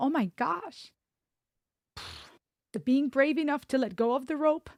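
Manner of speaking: emotion welling up, choked. Responding to another speaker's words about letting go, getting emotional. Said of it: "I'm gonna get emotional".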